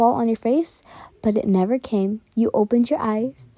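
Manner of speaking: ordinary delivery, nothing marked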